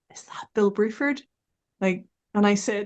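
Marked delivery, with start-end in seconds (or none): 0.2-1.2 put-on whisper, higher. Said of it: "Ian whispers to me".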